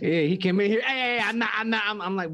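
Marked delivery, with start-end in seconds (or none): 0.8-1.8 mock loud shouting, higher pitch. Retelling how another speaker came in loud: imitating someone yelling. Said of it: "you sound loud as fuck to me".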